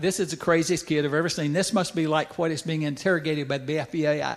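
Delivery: ordinary talk, nothing marked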